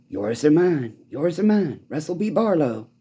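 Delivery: weird, creepy put-on voice. Imitating Wendell Mason in his energy thing: weird voice. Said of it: "comes with this weird, weird voice".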